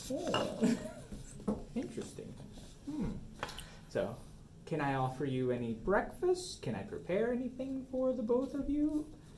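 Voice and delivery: high, soft, quizzical, sing-song skeptical lady voice. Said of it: "the eyebrow, like".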